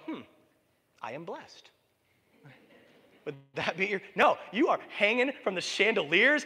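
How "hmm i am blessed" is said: put-on serene, calm, very quiet, hushed musing. Acting out a lottery win with a mock calm reaction. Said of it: "would you calmly go".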